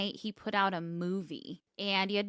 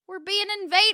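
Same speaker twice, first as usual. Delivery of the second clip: put-on shrill, very high, very loud old man's yell; 13 semitones higher, 9 dB louder than usual. Telling a friend about an old neighbor who came out one night; imitating an old neighbor. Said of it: "This like old guy comes out and he's like".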